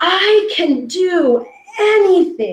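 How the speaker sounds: mock very high, very slow, joyful top-of-the-lungs scream. Retelling how a camper ran up, imitating a girl screaming joyfully. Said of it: "screaming at the top of her lungs".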